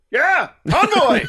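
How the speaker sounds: put-on overexcited, stoked henchman voice. Imitating the henchman answering the leader about the convoy: imitating an overexcited henchman. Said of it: "he's real stoked about everything".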